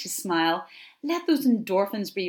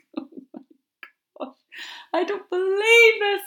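very high, cracking-up laughter breaking up the words; 12 semitones higher, 4 dB louder than usual. Telling a joke on camera and unable to get through it, cracking up laughing. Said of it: "I cannot get through this joke without laughing".

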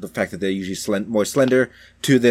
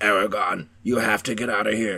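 rough, gravelly dragon growl, not feminine. Describing an audiobook's female dragon, imitate it: gravelly, growly dragon voice. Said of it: "It was very gravelly, very growly".

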